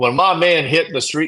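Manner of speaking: put-on Southern accent. Reading a quote from a threat transcript aloud: put-on southern accent. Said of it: "he doesn't have a southern accent".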